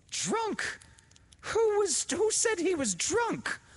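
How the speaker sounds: furious. She turns on her sister, who called a dead workman drunk; furious. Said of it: "Laura turned furiously on Josie".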